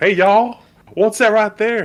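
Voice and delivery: put-on Southern accent, very high-pitched. Describing a movie actor's inconsistent accent: fake Southern accent. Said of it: "he tries to put on a Southern accent".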